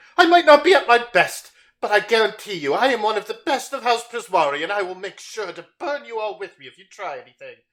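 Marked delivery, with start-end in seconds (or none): 0.2-6.7 huffy, huffing, pitched-up voice. Voicing a wounded mage who threatens the party: huffing threat. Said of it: "as he kind of huffs".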